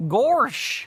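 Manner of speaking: bad, high-pitched cartoon dog voice. After mispronouncing Korok while collecting Korok seeds, doing a bad Goofy impression. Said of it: "I do bad voice impressions".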